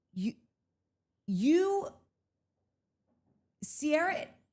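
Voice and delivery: angry, flustered, sputtering speech with false starts. Describing text messages that made them enraged, sputtering in anger. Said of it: "I'm gonna start to short circuit".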